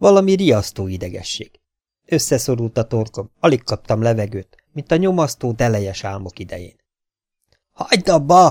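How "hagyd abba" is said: loud high-pitched shouting. The doctor cries out at the boy working the device, shouting. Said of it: "kiáltott".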